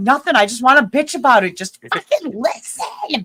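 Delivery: loud, all-out yelling and venting rant. Retelling a phone call about an internet outage: imitating own past yelling. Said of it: "And then I start yelling".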